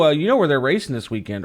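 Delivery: ordinary talk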